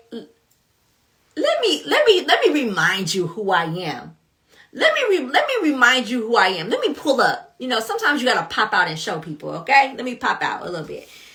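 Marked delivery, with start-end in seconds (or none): 0.1-7.5 swooping, animated speech with wide pitch swings. Imagining God's reply to a questioner: imagined voice of the Lord. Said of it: "The Lord was like".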